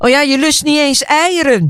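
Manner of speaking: high, panicky calling out. As he turns and walks away, she is calling out after him. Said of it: "roept ze tegen zijn rug".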